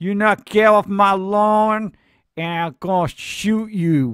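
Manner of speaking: hillbilly superhero voice. Speaker pitches a scrappy version of the superhero, redneck Captain America voice. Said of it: "Captain's America redneck cousin".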